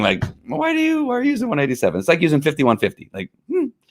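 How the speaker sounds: very high, swooping, mock-suspicious voice.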